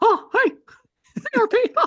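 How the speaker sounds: very high, loud cartoon mouse voice. Asked to do it again, the speaker puts on a Mickey Mouse voice. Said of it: "do it again".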